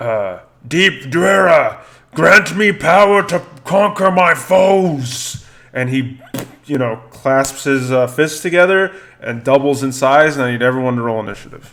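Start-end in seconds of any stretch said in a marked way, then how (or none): 0.7-5.5 high, slow, loud battle yell in Dwarvish. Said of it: "yells out in Dwarvish".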